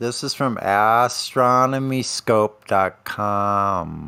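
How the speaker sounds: deliberately very slow, dragging "com". Reading out a website address as a joke: said slowly. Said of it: "You have to say it slow like that".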